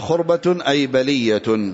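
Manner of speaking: usual speaking voice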